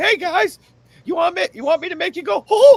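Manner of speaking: high-pitched cartoon mouse character voice. Imagining the timekeeper walking through a locker room greeting the guys: Mickey Mouse voice. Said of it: "imagine him in the fucking locker room".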